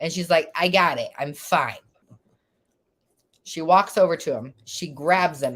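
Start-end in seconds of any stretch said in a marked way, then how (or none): 0.5-1.8 put-on slurred drunk speech. Retelling what a drunk best friend said, imitating a drunk friend slurring. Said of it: "she's drunk and, like, slurring her words".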